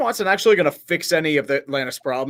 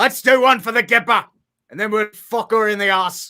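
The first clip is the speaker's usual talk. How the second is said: rusty put-on British accent, pitched up; 6 semitones higher, 3 dB louder than usual. Trying out accents with another person, in a british accent. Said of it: "long time since I've done a British accent".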